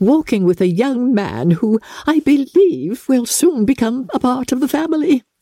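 delighted, thrilled, very high-pitched voice. A narrator reads a mother speaking to Lady Catherine, delighted Mrs. Bennet voice. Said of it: "delighted to speak to [name]".

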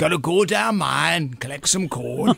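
put-on Welsh accent. Going through a ranking of accent stereotypes, in a welsh accent. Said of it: "Welsh is the seventh".

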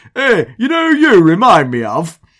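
put-on Oldham accent. Retelling how an Oldham fan intercepted him on the steps, in a caricatured Oldham accent. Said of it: "says in a fantastically Oldham accent".

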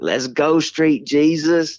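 high, slow, cheering Southern accent.

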